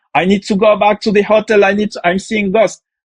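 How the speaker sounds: high-pitched screaming. Retelling how a team member saw ghosts: imitating someone screaming. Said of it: "he started to scream".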